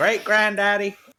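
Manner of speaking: put-on American accent. Imitating a descendant listing his namesake forefathers: bad American accent. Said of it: "both for my bad accent".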